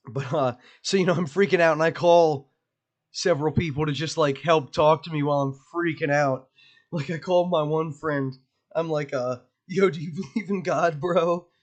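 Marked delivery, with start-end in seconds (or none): 9.7-11.4 frightened, uneasy, scared and anxious voice. Retelling calling a friend while freaking out, acting all scared. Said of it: "Like all scared and shit".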